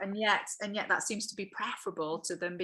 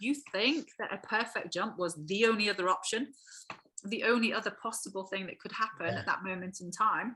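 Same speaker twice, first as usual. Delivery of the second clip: normal talking voice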